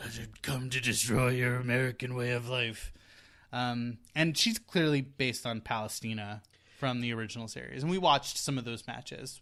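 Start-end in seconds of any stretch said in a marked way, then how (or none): 0.0-2.9 rough, deep-throated, gravelly villain voice. Retelling a wrestling character's line in a deep gravelly voice. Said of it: "deep gravelly voice and is like".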